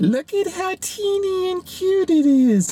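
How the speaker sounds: high-pitched, heavily sarcastic gush, dripping sarcasm. Showing a small single serving entree to viewers: very sarcastic. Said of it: "I'm saying that very sarcastically".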